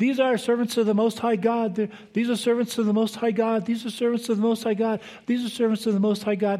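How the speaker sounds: put-on, high-pitched calling out, repeated. Retelling a slave girl following someone around: imitating a girl yelling. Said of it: "yelling out".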